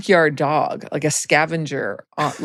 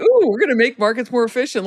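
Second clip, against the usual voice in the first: mock naive enthusiasm, higher; 8 semitones higher than usual. Retelling own past thinking on starting a job: imitating own naive past self. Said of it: "the naivete, of course, was like".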